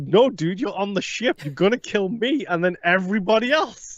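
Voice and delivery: put-on frantic, high-pitched, panicked pleading. Speaker retells their own reply to him on the ship, reenacting own past panic. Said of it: "I panicked so much".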